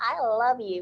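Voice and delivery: gushy, sugary American cartoon voice. Quoting people's fake gushy love talk: gushy Care Bear voice. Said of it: "like a Care Bear".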